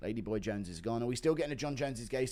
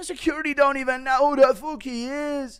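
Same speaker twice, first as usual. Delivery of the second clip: shrill, very loud, blaring, high put-on voice; 11 dB louder than usual. Doing an impression of a voice note: Connor impression. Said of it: "Impression of Connor's voice note".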